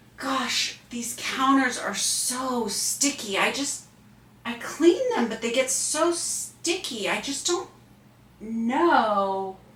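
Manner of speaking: slow, drawn-out, helpless, acted dumb voice. Acting out a scene as the wife, asked to show acting dumb: acting dumb. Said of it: "Show us how you would act dumb".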